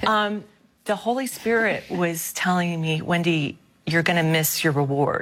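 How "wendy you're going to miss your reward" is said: ordinary talk, nothing marked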